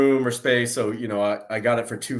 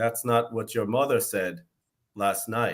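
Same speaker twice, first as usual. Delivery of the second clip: soft, hushed, wise mentor voice; 5 dB quieter than usual. Recalling a voice actor's perfect line, the speaker repeats it in an Obi-Wan voice. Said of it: "Obi Wan's voice, was perfect".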